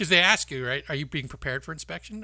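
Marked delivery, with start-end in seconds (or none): none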